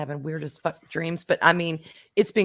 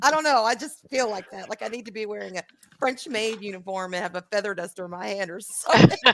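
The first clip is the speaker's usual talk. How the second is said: plain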